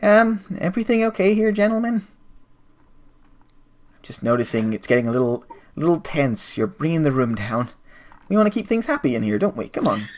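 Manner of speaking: slightly sweet soothing tone. Voicing a figure who speaks from behind the players: slightly sweet voice. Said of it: "a kind of slightly sweet voice says behind you".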